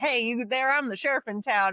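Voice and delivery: put-on twangy western accent. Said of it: "so country on this one".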